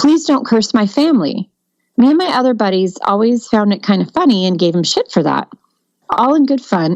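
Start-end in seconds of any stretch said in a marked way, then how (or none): 0.0-1.5 mock muted, mild, pitched-up drunken scream. Retelling a drunk buddy fighting back at bedtime: imitating someone screaming. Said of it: "started screaming".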